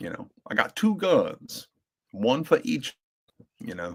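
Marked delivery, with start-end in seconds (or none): 0.5-3.0 put-on higher-pitched Georgia Southern aristocrat accent. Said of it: "so Doc Holliday".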